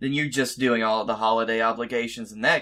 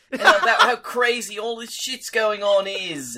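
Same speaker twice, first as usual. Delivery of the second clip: British accent with very high pitch; 11 semitones higher, 4 dB louder than usual. A guest shows how he talks when anxious: Moss from The IT Crowd voice. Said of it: "I turn into Moss from the IT crowd. And I start talking like this".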